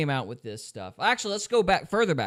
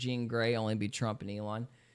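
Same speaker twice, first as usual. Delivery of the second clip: ordinary talk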